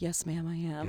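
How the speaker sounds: very quiet, oddly solemn, hushed, serious murmur. Talking with a co-host, the speaker shows how to reply: weirdly quiet voice. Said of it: "in a really weirdly quiet voice".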